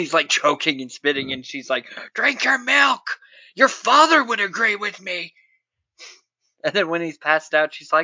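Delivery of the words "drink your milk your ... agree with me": high, screaming voice. Retelling a scene where a character forces milk on him: imitating someone screaming. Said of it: "screaming about milk".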